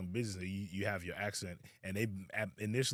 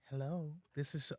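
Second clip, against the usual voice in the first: switched into a pitched-up phone voice; 6 semitones higher, 5 dB quieter than usual. Retelling the moment an aunt answers the phone after code switching: imitating aunt code-switching on phone. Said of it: "She went from, like, talking to the family, raw, strong Liberian accent".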